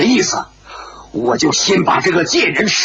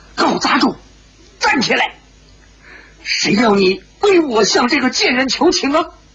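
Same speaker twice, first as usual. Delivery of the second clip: sharp, angry, stern, harsh, high shout; 7 semitones higher than usual. She rebukes the young man kneeling to plead on her behalf: stern harsh shout. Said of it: "梅芳姑厉声喝道".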